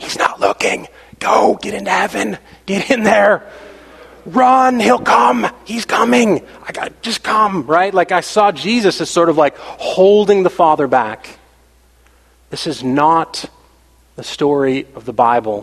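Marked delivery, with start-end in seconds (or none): 0.0-7.7 put-on urgent whisper, higher pitch. Acting out Jesus holding God back and urging escape: imitating Jesus whispering. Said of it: "whispering to me, like".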